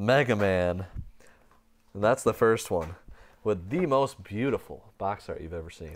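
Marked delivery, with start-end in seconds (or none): 1.9-5.9 dry, sarcastic mock-praising tone. Speaker going through games from a box, sarcastic. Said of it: "I'm actually being completely sarcastic".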